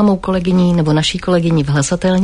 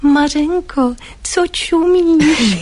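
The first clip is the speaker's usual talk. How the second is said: put-on sweet voice, pitched much higher; 9 semitones higher than usual. Speaker retells how Milena turned to her at the sink, imitating Milena's sweet, charming tone. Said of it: "tak kouzelným sladkým způsobem".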